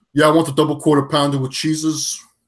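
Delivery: Italian gangster voice. Imitating Trump ordering fast food: Trump impression like Italian mobster. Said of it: "your version of Trump always sound like an Italian mobster".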